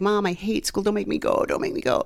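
desperate, repeated begging plea. Retelling how Rhonda begged not to go to school: imitating Rhonda begging. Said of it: "She would just beg and beg and beg".

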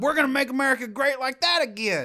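put-on Southern accent spoken at a very high pitch. Quoting a politician's slogan: Southern Trump impression. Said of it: "I like that you have a Southern Trump".

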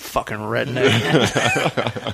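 mock mutter under the breath. Retelling how someone muttered under his breath, imitating the mutter. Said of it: "talking Under his breath".

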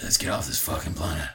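breathy whisper, all breath. Repeating the film line to show the actor's voice: Jason Statham voice. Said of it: "his voice".

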